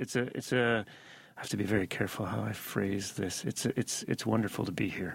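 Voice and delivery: careful, measured golf announcer voice.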